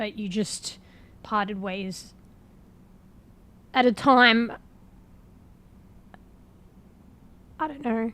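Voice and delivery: breaking, cracking voice. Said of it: "my voice is breaking".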